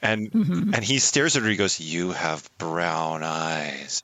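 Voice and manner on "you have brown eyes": very low, slow serial-killer murmur, eyes drawn out. Retelling a film scene, the speaker quotes the actor's line to his co-star; imitating a serial-killer tone. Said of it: "I don't say it in a serial killer tone of voice".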